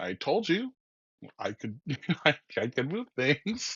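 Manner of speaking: acted-out offhand, unbothered, nonchalant tone. Retelling a classmate's reply after moving a hair tie: imitating someone nonchalant. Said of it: "really nonchalant about it".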